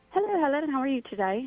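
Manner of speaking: put-on British accent. A guest, asked on air for her best british accent, greets helen in a british accent. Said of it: "we want to hear your best British accent".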